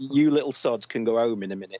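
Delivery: plain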